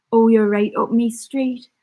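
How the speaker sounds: put-on Geordie accent held throughout. Taking accent requests, the speaker answers Mark's request in a Geordie accent. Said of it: "Geordie accent, please".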